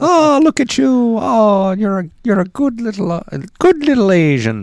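put-on Irish accent. Acting out the casually racist Irish cops from the book: imitating the Irish cops. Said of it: "They're like".

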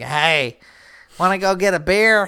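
funny put-on woman's voice. Acting out a woman asking a single man for a beer: funny put-on voice for a woman. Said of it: "why did four sound like that?".

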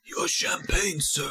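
whispered put-on character voice. Hosts naming henchmen left out of the games, one doing a Whispers impression. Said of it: "doing your impression of Whispers".

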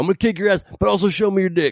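mock half-shout, high-pitched, mild yell. Explaining to a crowd how a heckler shouted: imitating a man shouting. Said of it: "a man shouting at you".

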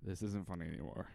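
ordinary talk

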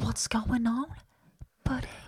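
soft, hushed little whisper. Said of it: "coming in with a little whisper".

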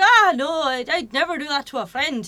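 attempted Scottish accent. Retelling a Trainspotting scene at the table, attempting a Scottish accent. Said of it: "my attempt at the Scottish accent".

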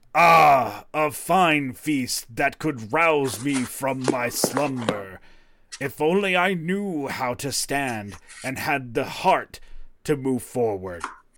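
loud bellowing voice of a stone statue. A stone statue animates, beats its chest and speaks in Dwarven; bellowing statue voice. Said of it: "and in Dwarven it bellows".

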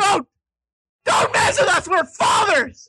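joking fake yelling. Joking about viewers who dislike unedited bits: mock screaming. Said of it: "started screaming like that".

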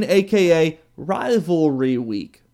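slow, each word stretched out. Going through the college football weeks and introducing the next one, said slowly. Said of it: "Got to say it slow".

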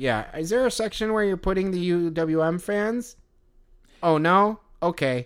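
high, nerdy, dorky squeaky little voice. Retelling an overheard kid's one-sided conversation, in a dorky squeaky voice. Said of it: "in this like kind of like dorky, squeaky voice was like".

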